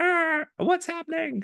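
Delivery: put-on voice, pitched very high. Speaker acts out researchers reacting to malaria going up, in a high-pitched voice. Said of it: "my high pitched voice made me cough".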